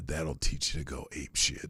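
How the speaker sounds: raspy, cheesy delivery. Acting out a cheesy one-liner after beating a gorilla: raspy Charles Bronson voice. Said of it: "it'd be a raspy voice like this".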